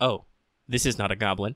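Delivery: dry, low, expressionless flat monotone. Speaker recapping a scene to a co-host, quoting Goblin Slayer deadpan. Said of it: "in his normal deadpan voice".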